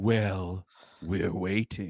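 low, eerie, spooky trailer voice. Pitching an imagined movie trailer's ending line: creepy voice. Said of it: "you will get a creepy voice saying".

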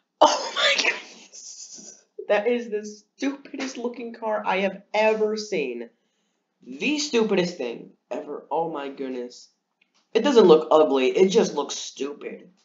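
words broken up by high, helpless laughter. Reacting to the look of the new Citroen C3, can't stop laughing. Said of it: "I can't stop laughing".

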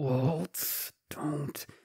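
hushed, words forced through clenched teeth. Narrator voicing Stanhope from the crowd, through gritted teeth. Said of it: "you see him grit through his teeth".

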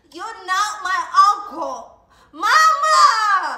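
very slow, high, loud, long drawn-out scream. Refusing to call Noodle uncle, then calling for Mama: screaming. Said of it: "why are you screaming like that?".

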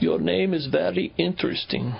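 heavy fake German accent. Retelling what a scientist from Germany said at their first meeting, very heavy German accent. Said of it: "he had a very, very German accent".

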